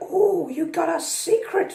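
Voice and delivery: very high, very slow, drawn-out, teasing clown voice. Retelling a movie scene where the clown teases a character: Pennywise voice. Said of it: "that's my Pennywise impression".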